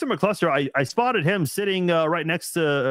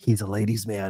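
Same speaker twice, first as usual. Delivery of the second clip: put-on whisper, lower pitch; 8 semitones lower than usual. Retelling what was whispered to a shy woman and her daughters: retelling a whisper. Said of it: "I just whispered to them".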